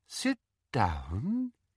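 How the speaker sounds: soft, silky, soft-spoken voice, pitch down, drawn out. Umbridge addresses the accused Mrs. Cattermole, in a soft, silky voice. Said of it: "said Umbridge in her soft, silky voice".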